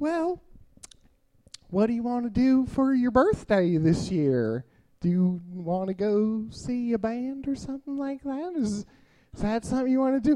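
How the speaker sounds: put-on soft Southern accent, woman's voice. Speaker quotes their girlfriend asking them a question; Southern woman impression. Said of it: "This is a fantastic impression, because not only is she a woman, but she's also from the South".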